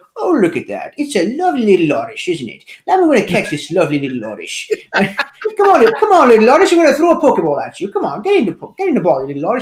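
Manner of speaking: put-on British accent, swooping and swinging. Playing Pokemon Go and trying to catch an Oddish, in a Hugh Grant-style British accent. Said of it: "just started talking like a British guy".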